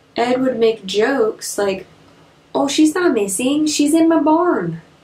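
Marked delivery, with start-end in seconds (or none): 2.6-4.8 put-on Fargo-area accent. Retelling the jokes Ed made about a missing woman: Ed in a Fargo accent. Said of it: "That's my Fargo accent".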